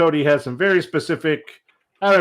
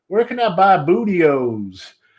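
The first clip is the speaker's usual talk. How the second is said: put-on slow, drawling country-accented kid voice; 3 semitones higher than usual. Retelling a young kid's question at WrestleMania: imitating a kid with a country accent. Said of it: "year old kid with kind of a country accent".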